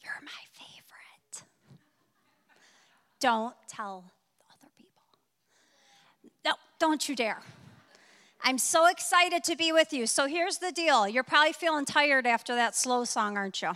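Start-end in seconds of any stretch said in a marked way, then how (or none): 0.0-7.4 soft, breathy whispered aside. On stage, telling the audience in the room something just for them: whispering. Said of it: "I'm going to whisper to you guys".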